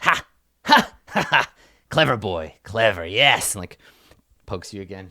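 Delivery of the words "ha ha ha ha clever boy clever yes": put-on laughing old servant voice. Voicing an old feathered servant who squints, then laughs: laughing old servant character. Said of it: "And then she laughs".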